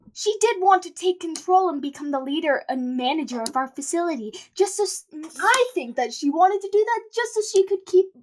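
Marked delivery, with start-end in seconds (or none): 4.5-8.0 high, halting, nervous stutter. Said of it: "pardon my stutter. I'm a little nervous".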